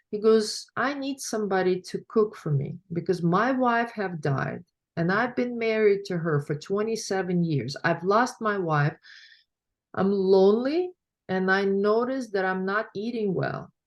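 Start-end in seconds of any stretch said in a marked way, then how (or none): none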